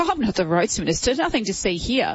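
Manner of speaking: usual speaking voice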